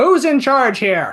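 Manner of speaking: high shout at the top of lungs. A player's character seizes a moment of confusion, shouting at the top of lungs. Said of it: "say at the top of my lungs".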